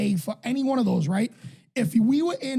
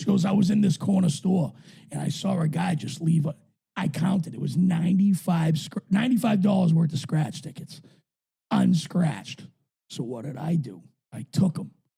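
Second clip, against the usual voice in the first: voice dropped lower and deeper; 4 semitones lower than usual. Retelling what a woman told her friends, deeper voice impression. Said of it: "I can't believe I'm doing a deeper voice".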